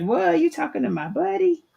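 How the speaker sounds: very high, up-and-down, rough, creaky swooping voice. Retelling how Miss Linda reacted to a call: voicing Miss Linda. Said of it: "she was like".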